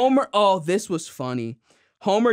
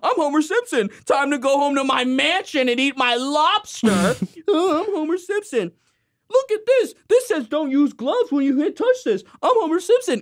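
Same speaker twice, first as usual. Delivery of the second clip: very high, unhinged, mocking ranting delivery; 10 semitones higher than usual. Retelling a man whose psyche breaks, doing a Homer Simpson impression. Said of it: "his psyche breaks and he pretends".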